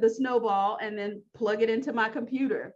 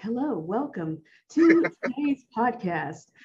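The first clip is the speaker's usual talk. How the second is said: commercial voiceover announcer delivery. Showing the voiceover voice they always wanted to do, commercial voiceover voice. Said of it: "like a voiceover person or like do commercials like".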